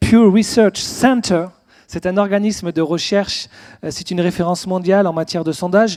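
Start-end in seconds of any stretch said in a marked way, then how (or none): 0.0-1.5 careful, proper English accent. French speaker citing a research organization's name, said with an English accent. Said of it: "je vais essayer de le faire avec le bon accent anglais".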